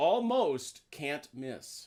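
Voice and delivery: almost leaned on hard, slow and high. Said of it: "I stress almost".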